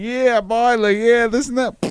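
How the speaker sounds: very high-pitched, rambling put-on cowboy accent. Acting out his past self telling a story to friends, in a cowboy accent. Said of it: "cowboy accent going".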